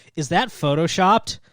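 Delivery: ordinary delivery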